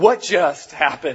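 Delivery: slow, stunned wonder and disbelief.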